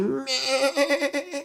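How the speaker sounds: high bleating like a farm goat. Imitating what the listeners' goats say, with a goat bleat. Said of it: "your goats say. I say".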